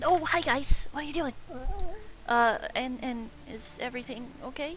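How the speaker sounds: nerdy character voice, high-pitched and squeaky. Voicing Ryla greeting the group: high-pitched nerdy voice. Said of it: "high-pitched and nerdy".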